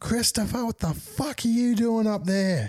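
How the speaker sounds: acted-out, very high, shrill screeching yell. Retelling a mum who came home and found a kid on the roof: imitating a mum screaming. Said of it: "she's fucking screaming".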